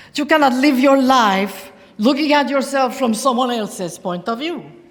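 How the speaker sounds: high, loud bad mock Spanish accent. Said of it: "my bad Penelope imitation".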